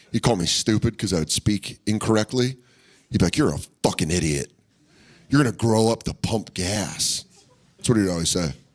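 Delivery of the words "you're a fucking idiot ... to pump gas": mock drunk voice, insulting tone, lower pitch. Retelling a drunk insult from mom's boyfriend: imitating a drunk boyfriend. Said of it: "He'd get drunk".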